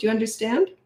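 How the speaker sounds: calm, unemotional, even-tempered, matter-of-fact delivery. Showing parents how to give a child a consequence: calm matter-of-fact delivery. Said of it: "That's how I talk".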